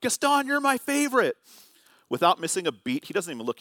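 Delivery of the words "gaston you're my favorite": very high, excited shouted call-out. Retelling how his wife called out to a passing character: imitating someone yelling. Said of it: "My wife yells out".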